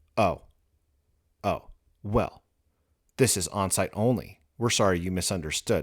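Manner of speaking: mock snippy, snotty robot voice. Retelling how the robot answered after the job mismatch: imitating a snippy robot. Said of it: "the bot's attitude changed to a bitch".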